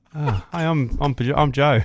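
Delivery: acted autopilot-style speech. Retelling a friend's introduction to someone: imitating Joe introducing himself on autopilot. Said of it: "It's like you were on autopilot".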